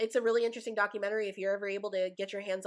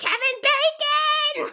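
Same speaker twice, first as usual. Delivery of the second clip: shrill, very high, very loud scream; 11 dB louder than usual. Retelling a chase scene from a Christmas special: imitating Mantis screaming. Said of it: "she's, like, screaming, she's like".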